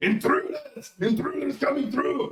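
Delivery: wild, very high, swooping scream. Voicing a character shouting during a sword fight, screaming, vaguely Arnold Schwarzenegger. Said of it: "Vaguely Arnold Schwarzenegger".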